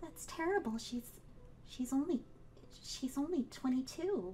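quiet character voice. Voicing a character reacting to a dead girl: Effie speaking quietly. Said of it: "Effie goes kind of quiet and says".

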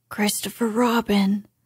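loud, carrying stage whisper. A narrator reads a character calling down from above, loud whisper. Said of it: "he said in a loud whisper".

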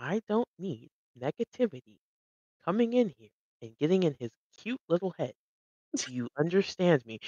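muttered under the breath. Voicing a character who threatens someone so others won't hear: said under their breath. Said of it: "under their breath".

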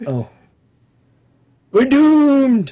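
put-on high sing-song old man voice. A game master voicing an old man reacting to the party, in an old man voice.

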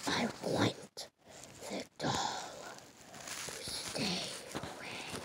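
very deep, slow, breathy whispered voice. Telling a scary story, voicing the girl's strange words: really deep voice. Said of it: "in a really deep voice".

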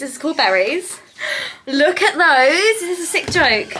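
out of breath, excited, gushing delivery. A speaker showing off a new eyeshadow palette, out of breath. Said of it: "Why am I out of breath?".

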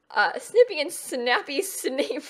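laughing to tears while talking. Saying the twins' names aloud, laughing to tears while talking. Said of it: "I'm laughing so much".

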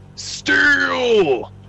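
high, loud yelling. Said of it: "Why are we yelling steel?".

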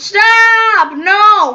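high, loud, outright yelled outburst. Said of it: "Stop raising your voice".

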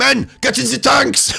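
very high, rough shout. Joking about what Hitler said to his men: Hitler voice. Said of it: "What did Hitler say to his men".

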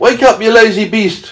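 shrill, very high shout. The centipede shouts at the sleeping glowworm in his hammock: shouted. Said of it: "he shouted at the glowworm".

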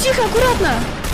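high, loud, alarmed yell.

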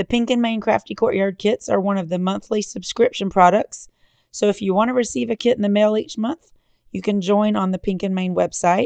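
hoarse, worn-out voice.

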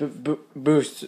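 halting stutter on booster.

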